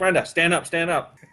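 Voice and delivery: ordinary talk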